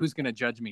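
ordinary talk

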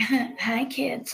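taunting, mocking tone. Retelling how a girl greeted someone: imitating a girl mocking someone. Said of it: "kinda mocked her".

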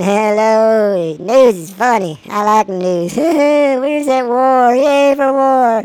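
slow, spaced-out put-on stoned voice, hello stretched long. Joking about being high and acting it out: imitating being high. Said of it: "me high is a whole different character".

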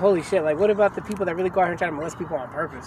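ordinary delivery

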